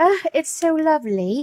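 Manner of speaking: Cockney-tinged British accent. Admiring a collage during an art class, slipping into a British accent. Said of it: "I like saying the word lovely and then I will have the British accent".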